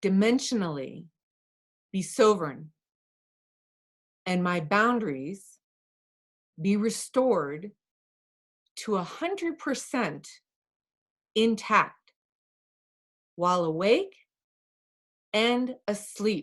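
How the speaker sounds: unhurried, pausing delivery.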